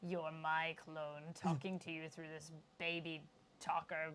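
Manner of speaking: sinister-sounding voice. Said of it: "I'm Sinister".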